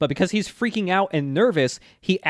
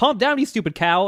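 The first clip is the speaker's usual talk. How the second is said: put-on shouting, high-pitched; 6 semitones higher than usual. Recounting a story where he tries to possess a panicking cow, retelling a shout. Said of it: "just like shouting like".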